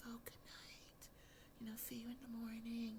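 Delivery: very soft, hushed whisper under the breath. Retelling a show scene where one character says good night to another, whispering.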